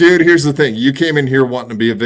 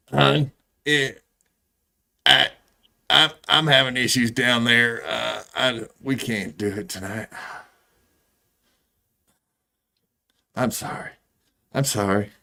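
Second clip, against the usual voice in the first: put-on old grandmother voice; 9 dB quieter than usual. Trying out how a granny would say a line: imitating Granny. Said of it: "let me try to say it like Granny".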